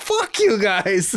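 high, mad, half-joking angry yell. Retelling speaking up after others said negative things: retelling a half-joking angry yell. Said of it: "And I was yelling".

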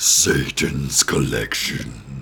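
very low, villain-style cartoon voice. Co-host on an episode, doing a Dr. Claw voice. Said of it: "That's a really good Dr. Claw".

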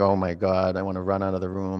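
ordinary delivery

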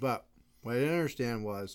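talking with mouth full. Chatting with a co-speaker while eating beef jerky, talking with mouth full. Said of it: "I have beef jerky in my mouth right now".

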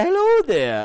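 very high-pitched, put-on Scottish accent. Teasing the co-host about how they first greeted listeners: imitating a Scottish accent. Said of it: "that was your Scottish accent when we first started".

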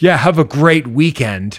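snide, sugar-coated, passive-aggressive jerk voice. Speaker retells what a man he drove past said to him, mock passive-aggressive dickhead voice. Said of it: "Like passive aggressive dickhead voice".

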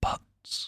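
butts breathed as a soft, unvoiced whisper. Checking that the microphone picks up sound, whispering into it: whispered 'butts'. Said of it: "I'm just going to whisper the word butts into the microphone".

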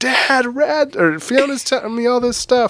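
mock all-out wailing child's scream, high. Retelling how Rad reacts to Fiona, imitating Rad screaming. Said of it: "He's just screaming".

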